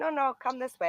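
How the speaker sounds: put-on French accent. Retelling what the man at the door said: imitating a French accent. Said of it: "he's French accent".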